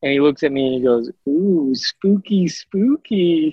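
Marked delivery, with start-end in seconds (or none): 1.3-3.5 put-on high-pitched small boy's little kid voice. Retelling a putt, imitating a little kid: imitating a kid saying spooky. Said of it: "the way that he said it was the funniest thing".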